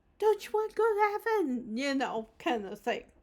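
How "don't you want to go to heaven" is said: acted, very high, loud, excited, peppy preacher voice. Showing how a monotone presenter should get people excited, with an excited, peppy delivery. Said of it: "gotta get people excited and be like".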